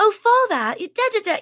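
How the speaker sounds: bad, very high, horrendous put-on British accent. Retelling a stage bit from the audience: bad put-on British accent. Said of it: "I don't wanna say British".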